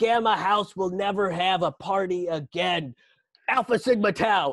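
high, stern scolding. Imagining a politician as a campus movie villain: imitating Nancy Pelosi as a college movie villain. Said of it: "she's gonna be like".

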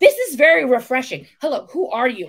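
eager, high, animated, lit-up, intrigued voice. Retelling a man meeting someone who didn't know him: retelling someone intrigued. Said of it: "he was like intrigued".

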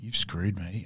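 dark, cold, low menacing voice. Acting out a scene from the movie: imitating Chopper dark and cold. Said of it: "dark and cold".

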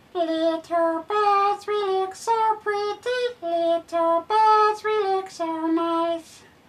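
very high, squeaky, tiny songbird voice. A streamer performs their little birds impression for viewers. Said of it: "There's my little birds impression".

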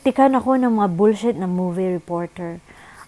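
ordinary delivery

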